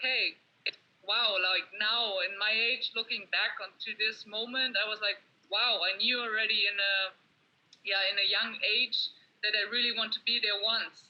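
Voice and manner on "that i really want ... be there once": ordinary talk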